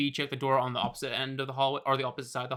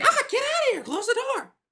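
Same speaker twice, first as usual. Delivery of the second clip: put-on very high, loud, swooping grandma voice; 7 dB louder than usual. Voicing someone in a bathtub as the door opens: female voice. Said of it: "a female voice is, it's like".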